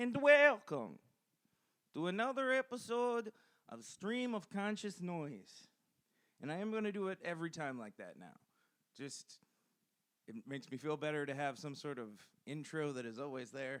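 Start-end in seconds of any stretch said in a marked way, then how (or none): 0.0-5.7 put-on high, loud, slow, belted weird Minnesotan Russian accent. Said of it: "the weird Minnesotan Russian accent".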